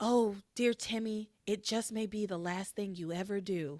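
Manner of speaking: whispering under breath. Retelling a plot where the angel girl answers Timmy: whispering under her breath. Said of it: "whispers under her breath".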